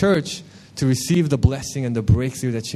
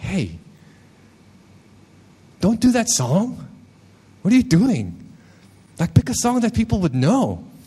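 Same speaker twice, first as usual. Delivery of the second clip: higher-pitched, unkind tone. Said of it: "it wasn't, like, the kindest tone".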